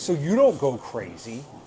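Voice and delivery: ordinary talk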